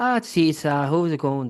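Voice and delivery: American voice doing a badly faked Irish accent. Speaker asks the others which is more offensive: an american trying an irish accent. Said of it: "when an American tries an Irish accent".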